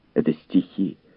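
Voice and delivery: ordinary talk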